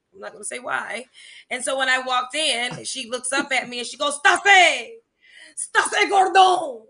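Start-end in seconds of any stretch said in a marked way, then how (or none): 4.2-6.7 very loud put-on French accent, pitched up. Retelling how a freshman sister called out a name: imitating a French accent. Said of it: "where is this French accent?".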